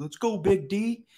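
very high, loud, drawn-out, stretched-out scream. Retelling what a player screams to his partner mid-match: imitating someone screaming. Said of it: "and he screams, like".

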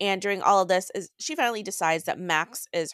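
ordinary delivery

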